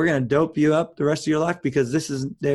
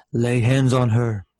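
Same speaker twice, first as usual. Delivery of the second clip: big, dramatic, heavenly-sounding voice; 3 semitones lower, 4 dB louder than usual. Retelling a voice heard in his head while his mom weeps, movie voice of God. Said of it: "It sounded like the movie voice of God".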